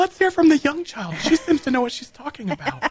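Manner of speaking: put-on church lady voice, very high. Calling on the young child to speak: put-on church lady voice. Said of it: "It's like the church lady in Montgomery".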